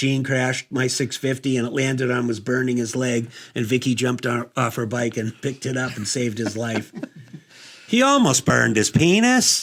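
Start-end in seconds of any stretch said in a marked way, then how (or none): 7.9-9.6 put-on Scottish accent, high and swooping. Telling a story to friends, scottish accent. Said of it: "That was kind of like my Scottish accent".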